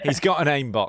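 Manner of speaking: normal talking voice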